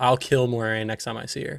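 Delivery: ordinary delivery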